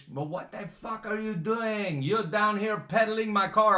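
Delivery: loud, high outburst in a put-on Swedish accent. Recounting a man coming down after the car slammed down, imitating his swedish accent. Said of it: "with his Swedish".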